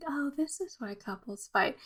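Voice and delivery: airy, drifty, far-off, dreamy musing. Imitating how she says her line: drifty, dreamy voice. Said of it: "kind of just like this kind of drifty, dreamy voice".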